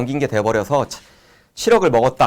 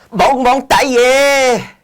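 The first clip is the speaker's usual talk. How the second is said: coarse, cheap put-on Hong Kong accent, very high; 11 semitones higher, 6 dB louder than usual. Imitating a Hong Kong person being shot, crude put-on Hong Kong speech. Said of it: "홍콩은 조금 이제 천박하고 좀 싼마이 나는 그런 말투죠".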